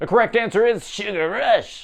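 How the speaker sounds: bad high character voice, pitch not quite reached. Giving the correct quiz answer: bad Vanellope impression. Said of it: "That is my impersonation of Vanellope".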